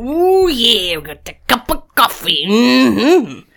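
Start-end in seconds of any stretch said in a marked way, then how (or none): 0.0-2.4 big, swooping wrestler promo voice. The speaker shows off an impression they can do: Macho Man impression. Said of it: "I can do a Macho Man sometimes".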